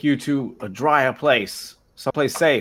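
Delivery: shouting. Calling out in character in an abandoned flooded town: shouting. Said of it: "I'm gonna shout".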